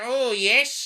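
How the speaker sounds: shrill, loud silly voice. Mocking silent film stars who had rubbish voices: imitating a rubbish voice. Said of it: "and then they talk like this".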